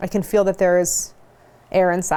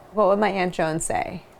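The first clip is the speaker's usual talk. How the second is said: plain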